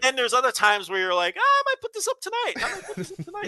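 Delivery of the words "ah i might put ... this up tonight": eager, keen, very high-pitched chirp. Imitating the co-host being eager to put a show up: imitating Rich's eager voice. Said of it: "the way you do the impression of me with that voice".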